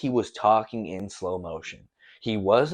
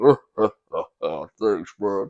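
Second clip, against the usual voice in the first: put-on evil villain chuckle, slowly gathering and building up; 3 semitones lower, 4 dB louder than usual. Retelling someone's reaction to a compliment on his voice, imitating an evil villain chuckle. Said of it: "Literally sounds like an evil villain laugh".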